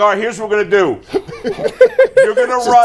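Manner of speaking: mock swaggering, cocky, take-charge tone. Retelling own play call in a flag football huddle: retelling own cocky talk. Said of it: "I'm getting cocky now".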